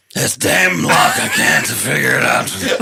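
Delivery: pretending to sound drunk. Fumbling with the lock on the door, pretending to be drunk. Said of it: "I'm gonna roll deception to pretend to be drunk".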